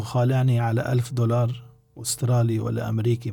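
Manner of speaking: ordinary delivery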